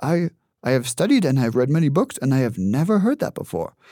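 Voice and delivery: put-on speaking with Haitian accent. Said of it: "he has a very thick accent".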